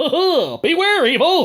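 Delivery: very high, loud, drawn-out superhero laugh. After someone praises their evil laugh, the speaker answers with a superhero laugh. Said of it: "That's my superhero laugh".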